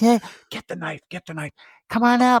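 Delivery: acted, high voice, chatting through laughter. Acting out the gingerbread men luring someone upstairs: gingerbread men laughing while talking. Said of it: "they're just laughing like".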